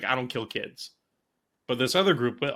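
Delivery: plain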